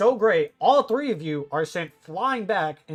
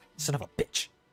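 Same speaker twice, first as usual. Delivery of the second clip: muttering quietly under breath, lower and quieter; 4 semitones lower, 7 dB quieter than usual. Voicing a character who stops after a reply: mumbling under breath. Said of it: "mumbles under his breath".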